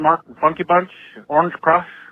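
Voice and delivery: ordinary delivery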